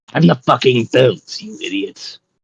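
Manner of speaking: fed-up, exasperated, swearing talking-belt voice. Voicing a belt that would face palm at the players: exasperated belt voice. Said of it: "if the bell could fist, like, face palm".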